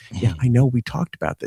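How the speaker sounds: soft, low, secretive, hushed half-whisper. Retelling what she said in the bath with her back turned, imitating a half-whisper. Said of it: "And she's whispering".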